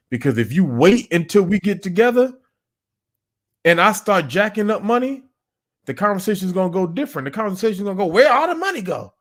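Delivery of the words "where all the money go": high, put-on woman's voice. Acting out how a partner would react to missing money: imitating a woman's voice.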